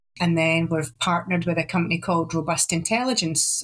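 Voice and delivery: ordinary talk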